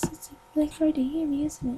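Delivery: speaking very softly. Showing how quietly spirits talk: very quiet voice. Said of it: "when I say quietly, I mean like this".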